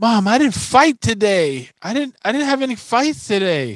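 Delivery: put-on shrill, very high child's shriek, sounding proud. Recounting his five-year-old daughter getting off the bus, retelling a proud scream. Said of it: "the first thing she screams to her mom is".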